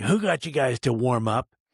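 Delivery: pretended, mock-angry tone. Retelling walking up to the group that was warming up, mock-angry. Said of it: "I made sure that I sounded like I was kind of angry".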